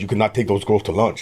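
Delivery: put-on heavy Peruvian accent. Retelling what a boss from Peru told the speaker: heavy Peruvian accent. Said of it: "he has a very heavy accent 'cause he's, uh, from Peru".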